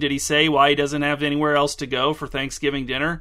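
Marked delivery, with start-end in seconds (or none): none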